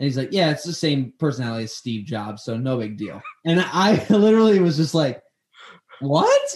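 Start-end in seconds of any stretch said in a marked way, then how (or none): none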